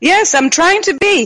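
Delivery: loud shouting. Answering the host's question about whether she is there: yelling. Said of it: "you don't have to yell".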